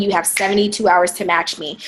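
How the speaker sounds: normal talking voice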